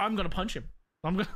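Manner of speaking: threatening, menacing tone. Imitating how Eddie reacts when told something like that: imitating Eddie threatening to punch. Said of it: "he's like".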